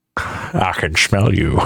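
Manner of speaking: low, very slow narrator voice, every word dragged out. Quoting a game clip line after impressions are mentioned: Morgan Freeman impression. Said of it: "doing the impressions of Morgan Freeman".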